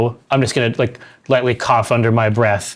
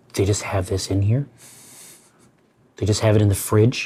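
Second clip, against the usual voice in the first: half-whispered, hushed, under the breath; 3 semitones lower, 3 dB quieter than usual. Half-whispering in character to Burnout on seeing the mech: half-whisper. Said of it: "I'm gonna whisper to Burnout".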